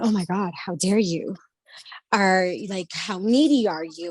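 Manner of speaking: harsh, berating scolding voice. Voicing the inner voice that tears the speaker apart: harsh inner critic berating. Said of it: "I have this voice that will start going and going".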